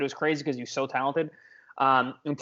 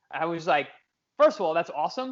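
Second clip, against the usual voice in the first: usual speaking voice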